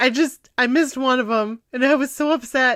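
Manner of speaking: ordinary talk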